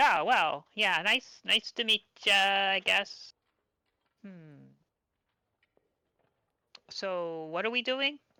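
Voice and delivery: grating, screechy attempt at flair that flops. A character who is no performer tries a greeting with a flourish, screechy voice. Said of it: "it's a little bit screechy".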